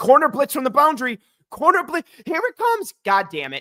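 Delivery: very high, shrill, exasperated, swooping yelling. Retelling watching the game and yelling at the TV: retelling yelling at the TV. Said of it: "I'm literally yelling at the T V".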